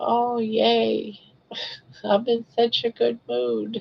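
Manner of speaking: play-acted half-asleep, groggy, drawn-out "yay". Retelling her morning affirmations, acting out being half asleep. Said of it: "but I'm half asleep".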